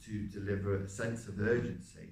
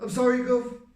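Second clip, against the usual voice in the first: voice suddenly shoots very high and raised; 11 dB louder than usual. Recalling apologizing to the Gov, sudden very high voice. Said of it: "I had to go really high with my voice all of a sudden".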